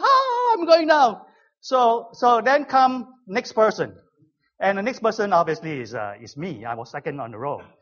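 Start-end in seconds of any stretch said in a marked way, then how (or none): 0.0-1.2 put-on high, frightened, babyish scream. Recounting a skydive, act out the jumper before you: imitating screaming like a baby. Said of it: "he was like screaming like a baby".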